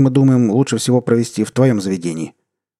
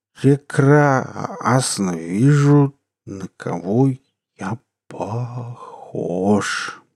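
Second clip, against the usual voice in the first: slurring words, much slower; 3 dB quieter than usual. A man answers his wife's exclamations, slurring. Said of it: "возразил заплетающимся языком".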